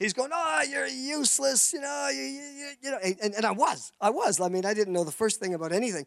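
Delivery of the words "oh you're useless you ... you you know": furious, high-pitched angry ranting and yelling. Retelling the farmer after the cows escaped: imitating an angry farmer yelling. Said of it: "the farmer's just going nuts".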